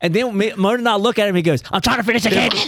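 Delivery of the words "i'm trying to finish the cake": tiny, squeaky mouse-like voice. Quoting a man trying to finish the cake, in a little mouse voice. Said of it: "you sound like the little mouse".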